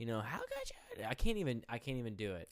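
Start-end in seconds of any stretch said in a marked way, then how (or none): 0.2-1.0 very high-pitched voice cracking and breaking apart. Retelling how Heather sounded, imitating a breaking voice. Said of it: "'Cause her voice breaks".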